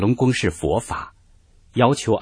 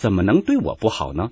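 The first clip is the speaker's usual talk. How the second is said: ordinary delivery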